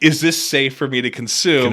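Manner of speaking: normal talking voice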